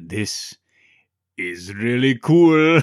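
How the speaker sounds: booming, loud, slow, drawn-out movie-star delivery. Suggesting listeners try a film line at home: Arnie voice. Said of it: "the line in his voice".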